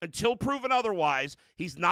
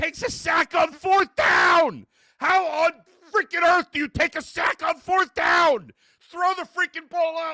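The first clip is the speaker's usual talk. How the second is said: shrill, very high, furious ranting scream; 10 semitones higher, 7 dB louder than usual. Ranting about a player taking a sack on fourth down, screaming. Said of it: "I'm screaming too loud".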